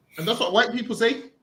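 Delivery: ordinary delivery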